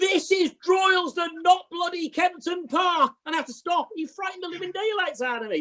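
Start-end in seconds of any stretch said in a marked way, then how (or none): 0.0-3.1 put-on yell at the top of the voice. Retelling how the listener's dad yelled up from the ladder: imitating someone shouting at the top of his voice. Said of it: "shouted at the top of his voice".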